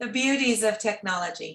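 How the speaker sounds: ordinary talk, nothing marked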